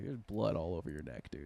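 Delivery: low, soft, hushed voice.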